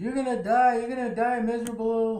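high-pitched, loud scream.

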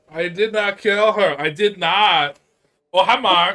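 very loud, very slow, high belted delivery. Answering a remark on sounding like Tommy: Tommy Wiseau voice. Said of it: "Tommy Wiseau".

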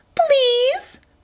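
very high, whiny, squeaky, taunting, mocking voice. A kid repeats the narrator's plea back to mock the narrator, squeaky mocking voice. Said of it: "the kid said in a squeaky voice, mocking me".

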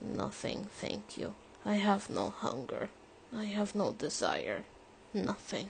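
voice kept down low, subdued. Turning away when urged to keep eating, answering in a low voice. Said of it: "His voice is low".

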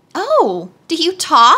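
very slow, astonished, swooping pitch. A maid shooed a hen, and the hen answered her back; surprised. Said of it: "evidently surprised".

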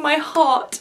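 plain

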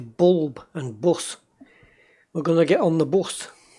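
quick, rattled-off northeast English accent. Explaining how you lost your old accent: northeast English accent. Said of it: "With me northeastern accent".

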